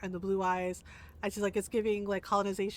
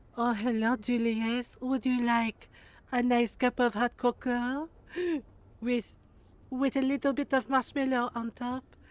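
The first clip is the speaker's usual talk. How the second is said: imitated French accent; 3 semitones higher, 4 dB louder than usual. Acting out Julius's mom talking to him, in a put-on French accent. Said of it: "Is it because she's French?".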